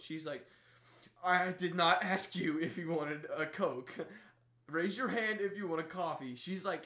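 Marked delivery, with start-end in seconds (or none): 1.2-6.3 mock pissed-off, loud, angry, irritated tone. Retelling her answer to a man who wanted coke: imitating someone pissed off. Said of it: "She's, like, pissed. So pissed".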